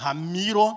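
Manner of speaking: heavy stress on every syllable of Ramiro. Imitating how she says his name: heavily stressed syllables in ramiro. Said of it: "mulher gosta de enfatizar algumas sílabas, né? Ela fala assim".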